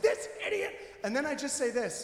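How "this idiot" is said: play-acted, very high-pitched, furious angry yell. Retelling yelling at someone in traffic: imitating an angry yell. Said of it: "I yell at someone in traffic".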